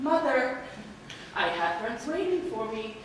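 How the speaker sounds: ordinary delivery, nothing marked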